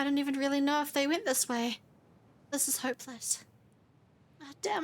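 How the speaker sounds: breathless, panting. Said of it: "I'm completely out of breath".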